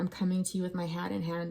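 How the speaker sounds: ordinary delivery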